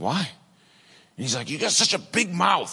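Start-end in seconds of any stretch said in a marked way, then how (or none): 1.5-2.7 put-on angry, mad outburst, pitched very high. Speaker acts out how he got mad at them, retelling an angry outburst. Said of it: "he got all mad with me".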